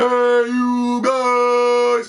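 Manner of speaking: shrill, booming, very high shout, "guys" drawn out. Retelling a stranger in an online party: imitating a Goonies character voice. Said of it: "sounded like the guy from the little Aspergian weirdo from the Goonies".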